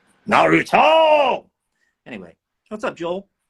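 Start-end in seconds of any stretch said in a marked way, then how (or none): 0.3-1.5 slow, stretched-out high yell. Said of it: "then I'll yell".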